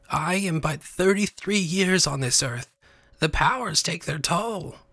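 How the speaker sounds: weak, feeble, quavering, high warbling voice. Narrator reads the witch's line after her voice turns weak; weak, warbling voice. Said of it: "voice was now weak and warbling".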